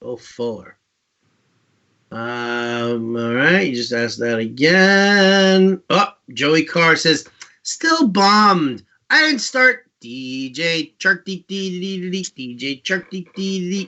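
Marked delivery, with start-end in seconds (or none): 7.6-13.9 squeaky, high-pitched, put-on voice. Reading a viewer's chat message aloud in a put-on high-pitched voice. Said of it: "if your voice is not that high-pitched".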